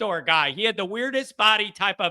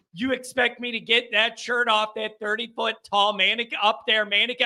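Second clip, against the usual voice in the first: normal talking voice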